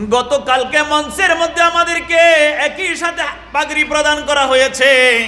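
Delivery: impassioned high wailing.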